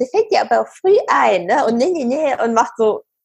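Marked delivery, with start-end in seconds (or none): 0.0-1.5 aping, mocking, know-it-all echoing tone. Retelling how her son aped what she had said to him, mocking imitation. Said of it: "mein Sohn äfft mich nach und sagt".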